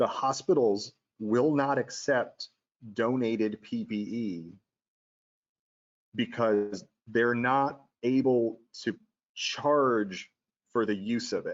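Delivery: drawn out, very slow, deliberate, word by word. Making a point to listeners, the speaker says this really slowly. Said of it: "I'm going to say this really slow".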